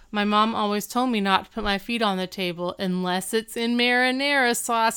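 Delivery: plain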